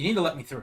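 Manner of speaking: grave, earnest, serious insistent tone. Voicing a character demanding to be let past: serious in-character demand. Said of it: "a seriousness that now comes over Oliver's face".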